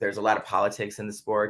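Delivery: normal talking voice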